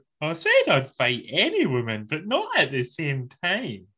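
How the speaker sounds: swooping, sing-song promo voice, up and down. Quoting a wrestler's ring promo: imitating Mandy's voice. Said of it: "That's what she sounds like, isn't it?".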